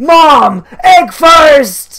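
very high, very loud, shrill, over-the-top hyped scream. Describing a super hyped guy, retelling his mock over-the-top yell. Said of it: "going mad, and like over the top".

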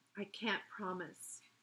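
plain reading voice

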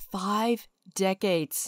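reluctant, really quiet, hushed delivery. Introducing themself to channel viewers, said really quietly. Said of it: "I'm going to say it really quiet".

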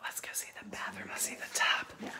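very soft, breathy whisper, barely voiced. Touring a finished home, moving on to see the bathroom and tub, whispering. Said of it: "I don't know why I'm whispering".

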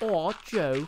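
bad put-on Australian accent. Trying the quote from Pearl again: bad Australian accent imitating Pearl. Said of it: "I can't do an Australian accent".

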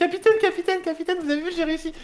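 overly sweet voice. Playing a character reporting success to the captain, in a very cute voice. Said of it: "Tu la vois prendre une voix trop mignonne".

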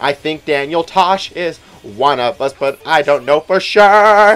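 loud, slow voice with words stretched out.

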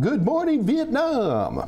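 pitch swinging up like a morning DJ. Greeting everybody after watching Robin Williams: Robin Williams impression. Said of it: "I've been watching Robin Williams".

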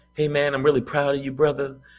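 relaxed, mellow, easygoing put-on delivery. Retelling what an old acquaintance said at the show: imitating someone talking real calm. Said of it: "And he's talking real calm".

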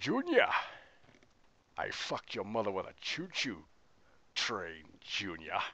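put-on film-star voice with wide swooping pitch. Doing a requested voice for viewers: Sean Connery voice. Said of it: "the Sean Connery request".

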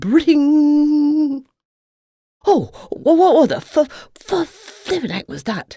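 very high, squeaky, drawn-out, startled outcry. A surprised intruder in the hen house as an alarm goes off, exclaimed. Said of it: "Exclaimed Ferdinand".

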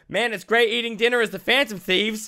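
put-on very high, loud shout. Retelling a character yelling out in a restaurant: retelling a yell. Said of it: "Like yells out".

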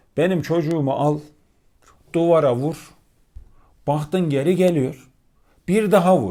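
mock-angry voice. Quoting a child's upset father to a colleague, retelling a furious rant. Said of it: "Ya adam o kadar sinirli, öfkeli diyor ki".

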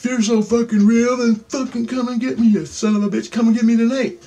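play-acted hollering, high-pitched yell. Retelling venting at the wall before bed, retelling a yell. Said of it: "So I'm just fucking yelling to the fucking wall".

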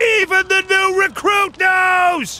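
high, slow, triumphant shout.

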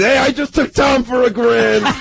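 acted yell. Retelling yelling out the back to the other golfer's buddies, retelling a yell. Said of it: "I'm yelling out the back to all Tom's buddies".

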